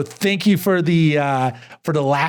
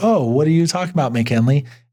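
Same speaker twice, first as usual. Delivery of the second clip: ordinary talk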